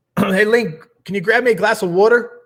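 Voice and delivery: put-on Philadelphia accent. After being told they sound like they're from Philly, trying out a put-on Philly accent. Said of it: "Sounds like I got your accent down there".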